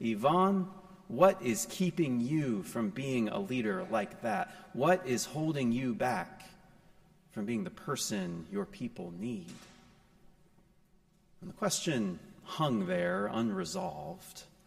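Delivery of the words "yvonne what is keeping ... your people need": mock firm, fairly stern, pointed, challenging tone. Retelling a companion's question to a man in a truck: retelling a stern remark. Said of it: "she said to him in a fairly stern voice".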